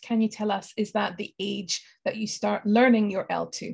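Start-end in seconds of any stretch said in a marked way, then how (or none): none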